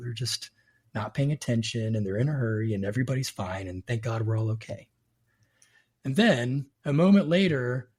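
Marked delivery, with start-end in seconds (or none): 0.0-4.9 whispering, lower pitch. Retelling being cut off while driving: retelling a whisper. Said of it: "I whispered".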